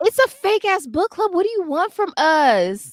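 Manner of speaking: very high, shrill yell with us drawn out. A host admits they keep putting off the book discussion, yelling. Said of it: "Sorry for yelling".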